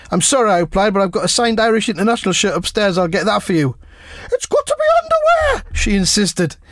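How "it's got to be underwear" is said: very high-pitched, insistent, put-on woman's voice. Speaker retells a woman insisting on her charity auction request, put-on lady's voice. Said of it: "That's me doing my lady's voice there".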